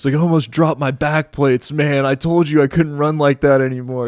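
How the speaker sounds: put-on breathless huffing. Telling a story, the speaker quotes Sean arriving after a run, imitating Sean huffing. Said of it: "Sean comes huffing around the corner".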